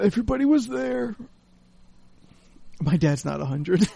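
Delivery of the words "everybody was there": put-on gasping voice, higher. Imitating a dad alone after family leaves, gasping. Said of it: "I don't know why I did that voice".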